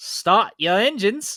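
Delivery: put-on nasally Australian accent.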